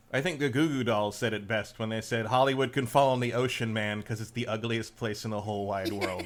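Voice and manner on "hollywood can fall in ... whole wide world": ordinary delivery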